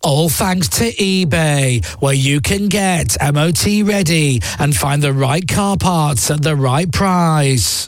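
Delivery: relaxed, slow, casual modern commercial voiceover. Showing how a voiceover would sound today, in a modern advert voiceover voice. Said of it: "If I was doing it in actual today voiceovers".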